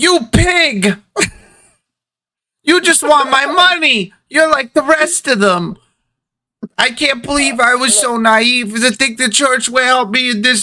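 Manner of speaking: very high, tearful, crying shouting outburst. Voicing a crying woman storming out of the confession booth: crying woman shouting. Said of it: "and you just hear her say".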